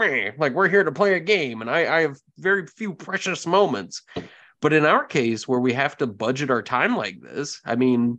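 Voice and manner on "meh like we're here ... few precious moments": cranky curmudgeonly grumble, pitched up. Mocking own impatience with chatting at the game table: imitating a curmudgeonly grumble. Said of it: "makes you sound so curmudgeonous".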